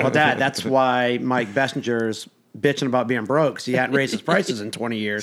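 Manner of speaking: ordinary talk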